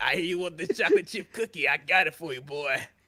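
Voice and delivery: teasing, flirty, come-hither put-on lunch lady voice. Imitating how a lunch lady talks: imitating a flirty lunch lady. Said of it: "Why she sound like she owns slaves?".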